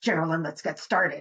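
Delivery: mock irritated, on-edge, agitated low voice. Illustrating how a frustrated co-host might open the podcast: demonstrating an agitated voice. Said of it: "in like a kind of agitated voice".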